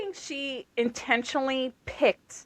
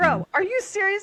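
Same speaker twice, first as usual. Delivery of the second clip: put-on scream, higher and louder; 8 semitones higher, 5 dB louder than usual. Retelling reacting to a book scene, imitating own screaming. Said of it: "I'm, like, screaming at the book".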